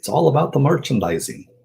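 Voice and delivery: horrible, squeaky, high-pitched put-on character voice. Quoting a line about merchandising as Yogurt would say it, Yogurt voice. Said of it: "That was a horrible, horrible Yogurt voice".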